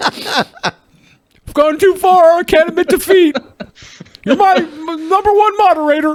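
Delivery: over-the-top dramatic cry, high and drawn out.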